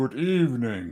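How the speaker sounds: slow, dry, droll put-on drawl, drawn out. Trying the greeting as Alfred Hitchcock: Alfred Hitchcock impression. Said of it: "reminds me a bit of Alfred Hitchcock, wouldn't you say? Let's give that a try".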